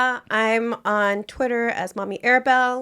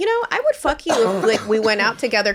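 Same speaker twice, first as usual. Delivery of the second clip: usual speaking voice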